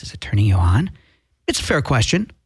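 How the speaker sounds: deep, very low, sultry, seductive put-on sexy voice. Host promoting his Tuesday night show to listeners, sexy voice. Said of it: "This is my sexy voice".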